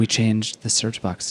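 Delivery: slow, deliberate, drawn-out delivery. Mocking a company announcement: Mark Zuckerberg impression. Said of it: "Mark Zuckerberg gets up and he's like".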